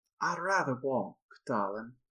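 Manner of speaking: put-on Southern accent. Voicing Yasin turning down an offer of help: Yasin's Southern accent. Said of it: "I gotta remember her accent".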